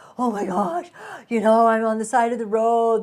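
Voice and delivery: acted panicky, upset, distressed voice. Retelling phoning the husband from the roadside: reenacted panicked voice. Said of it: "in this panic voice".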